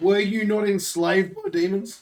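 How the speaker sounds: voice cracking. Asking another player a question, voice cracking. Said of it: "His voice just broke".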